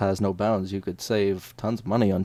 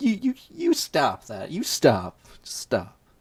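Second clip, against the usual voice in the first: acted-out sass and attitude, high and swooping; 6 semitones higher than usual. Acting out stopping a guy calling the police at a bank: sassy. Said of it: "I would wanna be really sassy about it".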